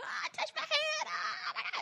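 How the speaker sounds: mock very high gushing cry, stretched out. Retelling fighting to the front at a concert: imitating own screaming.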